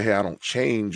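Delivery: ordinary delivery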